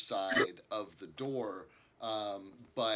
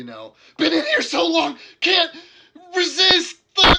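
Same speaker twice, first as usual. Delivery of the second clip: panicked, frantic, much higher, louder, slower; 20 dB louder than usual. Answering through a door to someone asking who's in there, panicked voice. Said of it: "in like a panicked voice".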